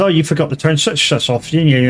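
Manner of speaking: ordinary talk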